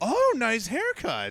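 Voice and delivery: put-on gushing elation, very high and loud. Retelling what everyone says to the speaker, in a mock-elated tone. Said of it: "with an incredibly elated tone".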